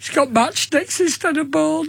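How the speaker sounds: upset, tearful voice, crying through the words. Retelling a child's complaint about a second-hand game: imitating tearful complaint. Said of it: "I started crying".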